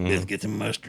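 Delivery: barely-there soft strained voice. Retelling how a friend who had a trach could barely talk: imitating a friend talking with a trach. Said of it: "He talked like this a little bit".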